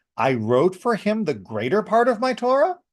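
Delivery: question-like rising intonation on the word Torah. Showing how flipping intonation changes a sentence: question intonation. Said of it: "you can do that even without changing the English. ... That would be the intonation that's necessary".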